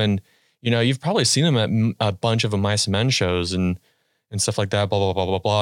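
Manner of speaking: plain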